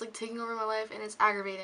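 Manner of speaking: really fast, rushed, rattled-off rambling.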